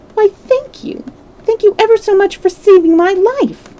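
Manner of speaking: tiny, squeaky, very high pitched mouse voice. Reading a story aloud, the narrator voices a field mouse in a squeaky little voice. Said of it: "it said in a squeaky little voice".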